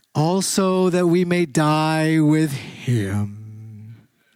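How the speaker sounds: gloomy, glum donkey voice, him drawn out. Speaker reads a Bible verse as if Eeyore were saying it: Eeyore voice. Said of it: "sort of said like this if it was Eeyore".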